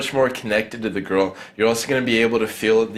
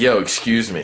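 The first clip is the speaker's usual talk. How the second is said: authoritative, commanding tone. Speaker demonstrates how to open a conversation with a girl, commanding tone. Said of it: "I open in a commanding tone".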